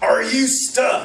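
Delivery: mock booming voice. Retelling someone calling out from behind while they climb: booming voice. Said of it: "I hear a booming voice behind me".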